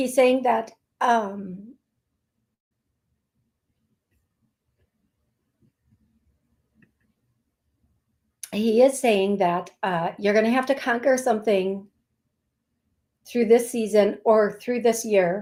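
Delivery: voice straining to hold back tears. Passing on a deeply emotional message to listeners, holding back tears. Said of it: "try to get through this without like losing it".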